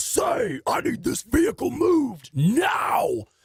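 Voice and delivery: put-on, very high-pitched projected voice. Retelling what he told a man blocking his driveway, retelling projecting his voice. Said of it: "I mean projecting".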